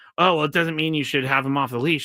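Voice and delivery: normal talking voice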